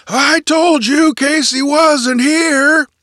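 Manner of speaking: hearty, cheerful, booming roar, very high. Narrator reading mr. burns calling out while unlocking doors in the hallway, cheerful roar. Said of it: "he roared cheerfully".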